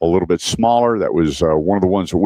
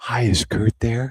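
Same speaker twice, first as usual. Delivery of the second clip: gentle, hushed, very soft, pitched-up voice; 5 semitones higher, 4 dB quieter than usual. Retelling a phone call from a man's man he knew: very soft voice. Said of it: "he goes in a very soft voice".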